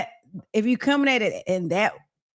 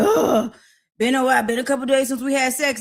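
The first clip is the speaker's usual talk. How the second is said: mock sarcastic, snide, smart-mouthed nagging, pitched higher; 6 semitones higher than usual. Acting out a partner nagging about sex: imitating sarcastic nagging. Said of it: "don't come to me with sarcasm and smart ass mouth".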